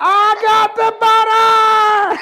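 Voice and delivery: booming, very loud, very slow, high-pitched yell. Telling a story, a character holds up butter: yelling. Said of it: "and he yelled".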